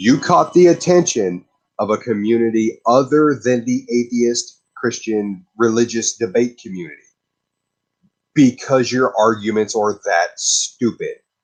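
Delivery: a little slow, unhurried, deliberate pacing. Addressing an online debater, repeating the point so he can understand, a little bit slow. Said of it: "I'm going to go a little bit slow".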